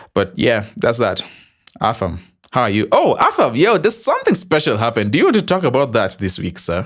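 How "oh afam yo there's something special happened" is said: suddenly much higher voice. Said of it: "why did my voice go high like that?".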